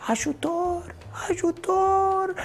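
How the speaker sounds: very high-pitched half-whispered shout. Describing someone fallen into muck, speaker acts it out, calling for help in a half-whisper. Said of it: "strigi după ajutor în șoaptă".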